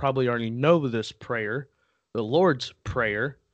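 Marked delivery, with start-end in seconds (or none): 2.1-3.3 very slow, drawn out word by word. Naming a prayer that sports players probably already know, really slow. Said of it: "Had to say that really slow".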